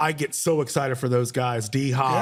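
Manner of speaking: ordinary delivery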